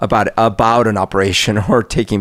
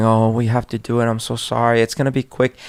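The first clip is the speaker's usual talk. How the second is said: put-on hushed whisper; 3 semitones higher than usual. Retelling holding their seven-year-old at a blood draw, retelling a whisper.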